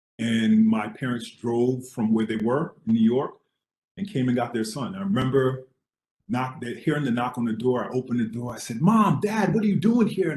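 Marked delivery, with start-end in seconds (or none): 8.8-10.3 high, loud, bright-eyed excited voice. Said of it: "I was really bright-eyed and excited".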